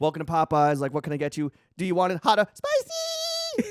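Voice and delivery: slow, drawn-out, sing-song drive-through speaker voice. Retelling a viral Popeyes clip, voicing the drive-through worker: imitating a drive-through worker. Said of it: "impersonating the voice over the drive-through voice".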